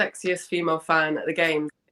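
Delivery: plain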